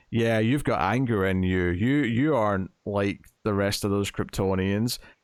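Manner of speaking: normal talking voice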